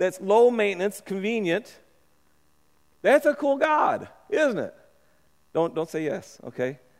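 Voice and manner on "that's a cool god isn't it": ironic, tongue-in-cheek, sarcastic, sing-song, pitched up. Talking to listeners about the god Aaron made for the people, sarcastic. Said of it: "I'm being sarcastic here".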